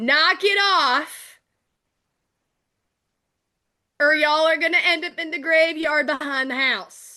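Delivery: angry, high-pitched yelling. Voicing a mother who takes a deep breath and calls to those upstairs: shouting up the stairs. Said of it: "and then shout up the stairs".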